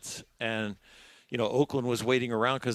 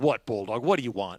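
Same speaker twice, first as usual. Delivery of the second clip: put-on mad, annoyed, sore voice. Retelling the manager's reply in his office after a loss: imitating mad Tommy Lasorda. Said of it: "when he's so mad after the win or after the loss".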